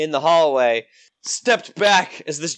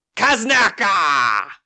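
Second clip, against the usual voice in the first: mild, short goblinish battle cry; 3 semitones higher than usual. Voicing a hobgoblin charging the party: shouting in goblin. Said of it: "he'll shout something goblinish".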